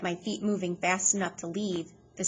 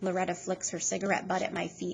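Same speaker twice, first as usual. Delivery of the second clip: ordinary delivery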